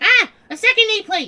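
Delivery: loud yelling. Finding a second nameplate, screaming. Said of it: "Why are you screaming?".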